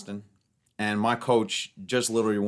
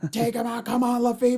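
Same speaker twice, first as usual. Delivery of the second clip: mock screaming, higher; 14 semitones higher, 3 dB louder than usual. Retelling a match and the coach's shouting: imitating coach screaming. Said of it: "screaming, top of his fucking lungs".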